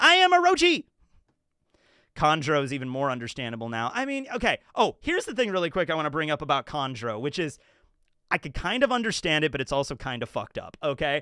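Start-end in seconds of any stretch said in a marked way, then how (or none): 0.0-0.8 shrill, loud character voice, pitched way up, belted. Answering a chat message asking for the voice: Orochi voice. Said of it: "I can still do the Orochi voice!".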